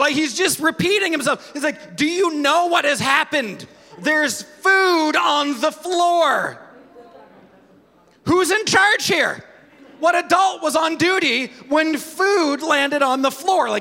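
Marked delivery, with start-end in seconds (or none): 2.0-13.7 put-on fussing, upset, distressed little-kid voice. Retelling a child upset over food on the floor: imitating an upset child. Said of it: "he is upset".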